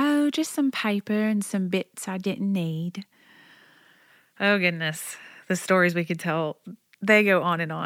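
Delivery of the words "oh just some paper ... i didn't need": put-on precious, sweet little British boy's voice. Retelling what a son said about the toilet: little boy's British accent. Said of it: "in his precious little British accent".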